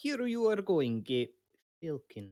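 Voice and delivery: very slow, drawn-out muttering. In a role-play scene, handing over a letter and correcting a name, muttered under breath. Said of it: "he says under his breath".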